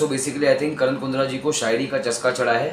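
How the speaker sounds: ordinary talk, nothing marked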